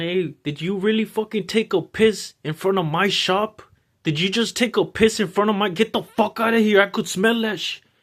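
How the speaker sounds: mock yelled, screaming tirade at full force. Retelling a shop owner waking a man outside his shop: imitating a man screaming. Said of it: "the guy screaming at him again".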